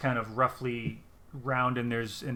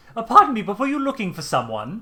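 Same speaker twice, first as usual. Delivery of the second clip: very high, very loud, swooping statue voice; 10 semitones higher, 10 dB louder than usual. Voicing a statue that speaks to players from behind: talking statue voice. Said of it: "a voice from behind you that says".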